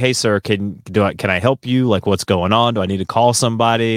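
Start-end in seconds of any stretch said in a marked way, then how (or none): none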